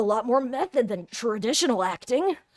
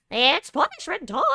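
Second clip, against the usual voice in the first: squeaky cartoon mouse voice; 4 semitones higher than usual. Voicing Monokuma as he appears before Hajime Hinata: Monokuma voice, Mickey Mouse-like. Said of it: "You sound more like Mickey Mouse than Monokuma".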